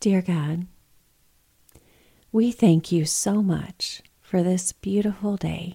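slow, drawn-out radio-announcer voice. A parent showing how they prayed over their kids at night, slow radio voice. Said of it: "that's a little bit of my radio voice".

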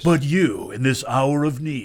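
dramatic movie-trailer announcer voice. A host, asked to do it again, performs the movie trailer voice. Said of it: "You're going to do the movie voice".

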